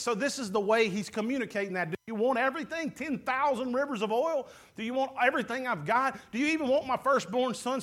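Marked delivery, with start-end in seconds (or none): 1.9-7.8 acted, proud, cutting, prideful sarcasm. Acting out how people answer god back: imitating a sarcastic, prideful reply. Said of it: "the pride and the sarcasm".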